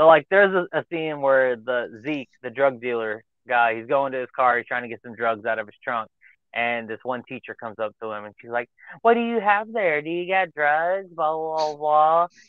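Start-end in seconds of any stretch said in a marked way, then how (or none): 9.0-11.1 put-on insecure woman voice, higher pitch. Retelling a movie scene where a teacher confronts a dealer: imitating an insecure woman. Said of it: "she's being all, like, super, like, an insecure adult woman".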